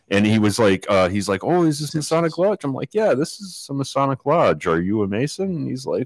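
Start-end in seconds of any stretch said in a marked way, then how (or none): 1.4-2.6 put-on thick Russian accent, pitched up. Retelling a man's question at the Masonic Lodge, thick Russian accent. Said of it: "he's got a very thick Russian accent".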